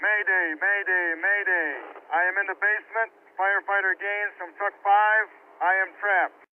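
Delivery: loud and clear, not shouting. Showing best practice for a radio mayday call: loud, clear voice, not shouting. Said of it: "Talk in a loud, clear voice. Don't shout".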